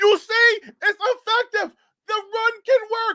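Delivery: mock very high, insistent, excited screaming. Retelling how he reacted while watching the run work: retelling his own screaming. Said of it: "I started screaming that".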